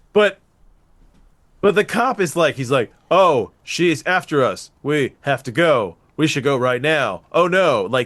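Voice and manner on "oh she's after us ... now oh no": slow droning monotone with no inflection. Mocking a cop character's acting in a movie, doing a Bill Paxton monotone impression. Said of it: "he's so monotone".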